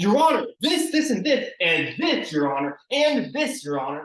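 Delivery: exaggerated, overly animated delivery with big swooping inflections. Showing how not to address a judge in court: overly animated inflections. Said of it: "that's too animated".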